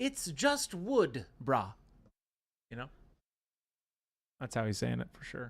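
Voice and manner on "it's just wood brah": put-on formal, precise English accent. Correct another speaker's version of how Watt says it, as Watt in a very proper English accent. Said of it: "with your very proper English accent".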